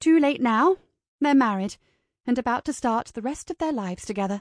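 ordinary delivery

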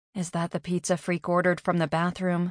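plain reading voice

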